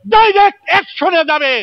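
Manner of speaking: rally shout.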